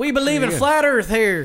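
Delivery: very loud, shrill, high put-on southern drawl. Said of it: "mostly southern accent".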